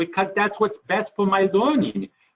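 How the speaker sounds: put-on sweet small-child voice. Retelling a four-year-old's reply to his question, in the boy's cute little voice. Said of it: "it's kind of his cute little voice".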